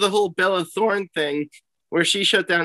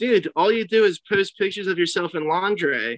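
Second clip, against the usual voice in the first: plain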